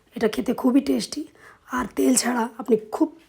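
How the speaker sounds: hoarse voice giving out, fading to a whisper.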